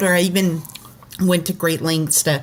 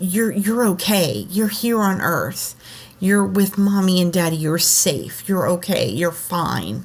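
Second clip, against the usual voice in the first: mock-soothing, acted reassuring tone. A parent retells what they said to their upset child: retelling a soothing reassurance. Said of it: "I just reassured him".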